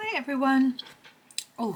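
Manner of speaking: speaking through a full mouth. Greeting everyone at the start, talking with mouth full. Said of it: "I've just been eating some chocolate. Still in my mouth".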